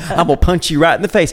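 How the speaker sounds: southern American accent. Showing how she yells or threatens people, southern accent threat. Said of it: "My southern accent comes out".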